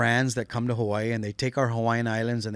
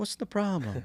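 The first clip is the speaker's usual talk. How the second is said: calm put-on grandma voice, higher and quieter; 8 semitones higher, 5 dB quieter than usual. Imitating a calming grandmother: imitating a calm grandmother. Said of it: "she was also kinda calming too".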